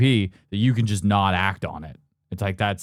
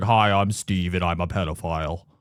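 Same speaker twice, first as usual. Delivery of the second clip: disguised, modulated, distorted anonymous voice; 3 semitones lower than usual. Describing a documentary, the speaker quotes a man in shadow: imitating a voice-modulated speaker. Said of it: "voice modulator on".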